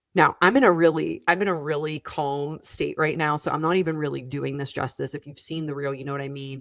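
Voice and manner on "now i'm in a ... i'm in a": plain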